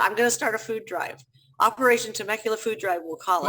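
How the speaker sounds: normal talking voice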